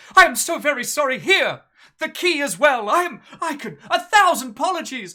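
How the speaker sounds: theatrically startled, very high and loud. Ordered out over an unpaid room, a character apologizes, mock startled. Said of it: "with the greatest of mock startled".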